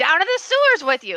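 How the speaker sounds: loud, high-pitched yelling. A game master voices a character who rolled a nat 20, yelling. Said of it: "so he yells out at you".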